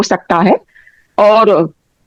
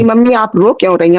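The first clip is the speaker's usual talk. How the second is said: usual speaking voice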